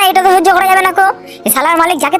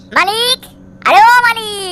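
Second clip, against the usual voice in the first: loud bellowing like a bull; 3 semitones higher than usual. Calling out for the owner in a skit: yelling like a bull. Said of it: "সবসময় ষাঁড়ের মতো চেল্লাচ্ছিস কেন?".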